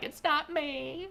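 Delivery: high, slow, mock-innocent tone. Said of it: "and it's like".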